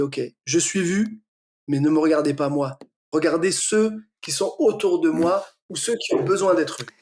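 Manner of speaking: ordinary delivery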